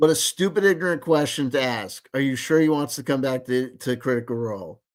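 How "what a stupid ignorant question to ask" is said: normal talking voice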